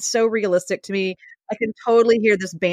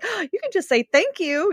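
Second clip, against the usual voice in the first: put-on sweet, smiling tone, higher pitch; 10 semitones higher than usual. Retelling a daughter answering an angry uncle: imitating a sweet smiling voice. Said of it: "her little sweet face and is smiling like".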